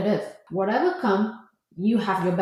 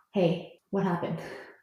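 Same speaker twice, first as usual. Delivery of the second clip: soft, calm, easy voice; 2 semitones lower, 6 dB quieter than usual. Mother showing how she questions a child after trouble, acting out a calm voice. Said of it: "when I talk to him in a calm voice".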